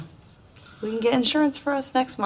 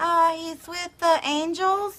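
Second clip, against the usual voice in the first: bad, high-pitched fake little-kid voice. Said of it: "bad impersonations".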